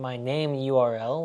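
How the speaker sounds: ordinary delivery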